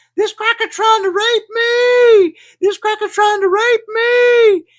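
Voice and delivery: piercing, full-lunged, high, loud scream, "me" drawn out. Retelling how a fleeing woman screamed to an audience: imitating a woman screaming. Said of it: "she begins screaming at the top of her lungs".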